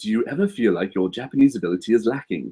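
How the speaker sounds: sudden plummy, posh English accent switched on. Speaker reads out a question, slipping into a posh accent. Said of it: "don't know why I got so posh all of a sudden".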